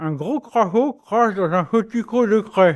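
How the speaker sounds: speaking with a pencil in the mouth. Repeating a French tongue-twister drill while speaking with pencil in mouth. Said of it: "[name] doit tenir un crayon dans sa bouche tout en répétant les mots".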